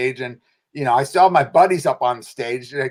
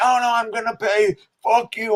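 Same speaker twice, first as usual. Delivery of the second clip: angry yelling, raised pitch; 8 semitones higher than usual. Recounting an argument over payment in an office, retelling someone yelling. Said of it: "he's like yelling in the office".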